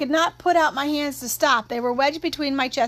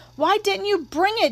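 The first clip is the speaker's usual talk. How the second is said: high, loud hollering yell projected over distance; 6 semitones higher than usual. A companion yells at the narrator for not bringing the tire: yelling. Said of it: "Jim yelled".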